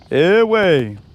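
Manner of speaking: slow, cartoonish bear voice. Imitating a brother who sounds like a cartoon bear: imitating a brother sounding like Yogi Bear. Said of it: "it sounds like Yogi, Yogi Bear".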